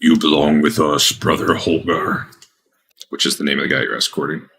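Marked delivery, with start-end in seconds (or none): 0.0-2.3 deep, slow, eerie, unsettling voice. Retelling a game scene, a voice from everywhere speaks in a deep, unsettling voice. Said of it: "it's like a deep, unsettling voice".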